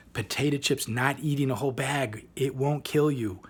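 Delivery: plain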